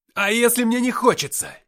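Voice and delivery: very high, very loud angry cry, rage held back. Narrator reading his own retort to a companion calming him, angry shout. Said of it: "в сердцах выкрикнул я, сдерживая бушующую в груди ярость".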